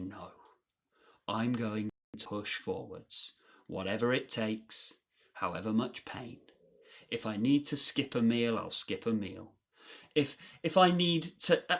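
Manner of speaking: normal talking voice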